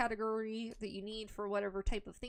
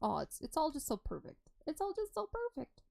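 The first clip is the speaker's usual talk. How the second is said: overexcited, delighted, high, swooping gushing; 6 semitones higher than usual. Touring a shop on a game server: excited, high-pitched voice. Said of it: "my voice is getting too high".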